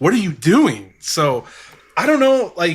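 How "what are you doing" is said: put-on yelling. Retelling how a man in the room yelled at someone: imitating someone yelling. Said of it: "yelling at [name]".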